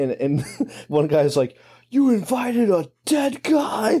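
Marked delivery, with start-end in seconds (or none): 1.9-4.0 put-on scream, pitched much higher. Recounting a scene, acting out one guy at a reunion, retelling a scream. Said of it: "Screaming like that".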